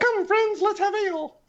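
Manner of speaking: very high-pitched gabble at twice normal speed. Player repeats his character's line after a haste spell hits him, double-speed speech. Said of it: "repeat what you said about having a drink in twice the speed".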